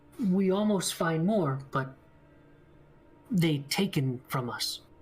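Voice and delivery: broken, halting delivery. Voicing a captured creature answering questions in broken Undercommon speech. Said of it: "he speaks in, like, broken Undercommon".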